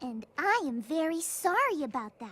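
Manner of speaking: very high, pitched-way-up, patronizing, condescending sorry. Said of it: "in the most condescending way possible".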